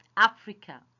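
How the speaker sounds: Africa stressed harder as the last word. Modeling stress on place names in a pronunciation lesson: stress on africa. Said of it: "you should stress the last word of the name".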